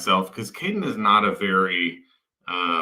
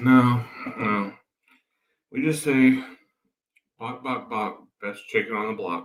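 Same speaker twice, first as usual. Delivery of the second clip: acted worn-out, tired, weary tone; 2 semitones higher than usual. Retelling her son's tired answer again: imitating a tired reply. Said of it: "he's tired, and he's like".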